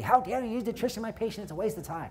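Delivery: put-on, high-pitched angry yell. Retelling a phone call where an oncologist yelled at the speaker; imitating an oncologist yelling. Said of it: "he's yelling at me".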